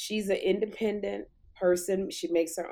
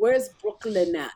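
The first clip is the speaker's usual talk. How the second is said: put-on Scottish accent, broad brogue; 4 dB louder than usual. Retelling what a man said when asked to say a Brooklyn phrase, Scottish brogue. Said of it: "he's got this Scottish brogue".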